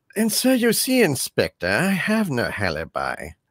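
acted, animated delivery with pitch swooping throughout. Showing the line used as the key to doing an impression: James Mason impression. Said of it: "the key to doing, uh, uh, James Mason".

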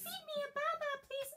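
put-on tiny toddler voice, very high. In pretend play with Miss Lynette, speaking as the baby: baby voice. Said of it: "That is the baby's voice".

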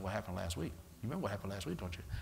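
fast, very low, very soft, smooth hushed patter. Imitating how the devil talks to people, fast-talking devil voice. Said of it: "Ain't that how the devil talk? Talk real fast".

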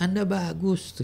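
sarcastic, mocking fake praise, very high in pitch. Demonstrating how praise can sound mocking, in mocking sarcastic praise. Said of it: "radanya gitu ya ngejek".

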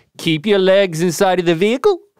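Kiwi accent, shifted ending inflection. Comparing aussie and kiwi accents, the speaker demonstrates a kiwi accent. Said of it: "My Kiwi accent is".

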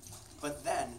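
plain

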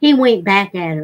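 plain

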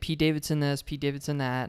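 ordinary talk, nothing marked

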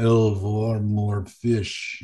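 very slow, drawn-out dolphin-like speech.

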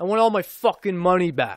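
movie tough-guy voice. Retelling a kid's line in a line of students: Vin Diesel voice. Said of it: "He was Vin".

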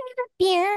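very high, exaggerated, laid-on sexy voice. Joking about a celebrity asking for beer: Jennifer Tilly voice. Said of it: "my Jennifer Tilly".

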